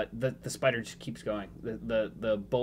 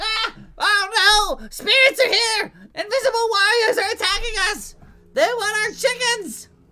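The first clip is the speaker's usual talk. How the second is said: very high, loud, shrill panicked goblin shriek; 14 dB louder than usual. Voicing a frightened armored goblin in a fight: panicked goblin voice. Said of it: "he's, like, freaking out".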